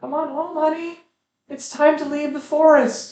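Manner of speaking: very high, shrill, loud calling voice. Voicing a mother calling her child home from the forest: mother shouting her child home. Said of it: "the familiar shout of your mother calling you home".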